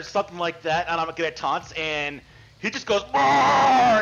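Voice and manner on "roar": high, loud, furious, pissed-off roar. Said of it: "just angry and just pissed off".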